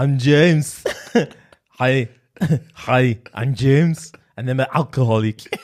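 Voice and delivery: put-on German accent, Austrian. Trying out a German or Austrian accent with another speaker, introduce yourself in an Arnie impression. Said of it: "I'll do I'll do Arnie. That's German, right?".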